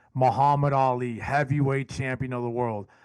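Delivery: ordinary talk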